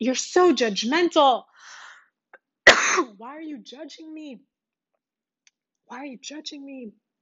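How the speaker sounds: high, angry, accusing put-on outburst. Speaker retells a woman accusing them of being judgmental; mock-angry accusing. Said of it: "She just went off".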